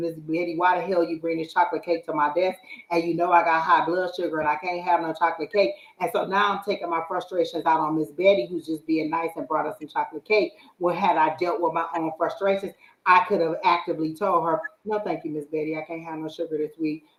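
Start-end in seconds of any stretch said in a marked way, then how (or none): none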